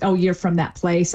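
ordinary talk, nothing marked

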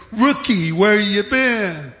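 mocking, sarcastic tone. Retelling a guard questioning a rookie's return: imitating a sarcastic tone. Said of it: "he said sarcastically".

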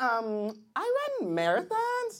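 put-on dragged-out, very slow young female voice.

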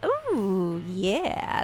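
put-on low, swooping old-school radio announcer voice. Co-host reacting when the sports segment is mentioned: old-school radio voice. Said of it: "It's my old school radio voice".

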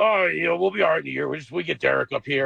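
put-on gruff voice. Retelling what the running backs coach would say about Derek, in Pat Dunlap's gruff voice. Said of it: "he had this real gruff voice".

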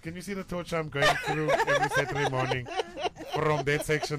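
high, laughing mock lament.

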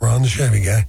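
normal talking voice

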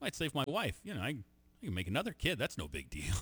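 acted completely earnest deadpan, no hint of joking. Retelling what a man said, imitating deadpan delivery. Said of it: "He was just deadpan serious".

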